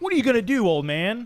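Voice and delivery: very high, loud delivery, fired off. Repeating the impression just praised: imitating Chael Sonnen taunting. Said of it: "that was a pretty good impression".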